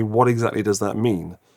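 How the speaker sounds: normal talking voice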